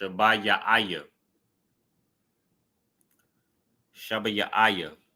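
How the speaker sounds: slowly sounded out, syllable by syllable. Teaching a word's pronunciation so listeners can practice it, said slowly, broken into syllables. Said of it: "I'm saying it real slow and breaking it up".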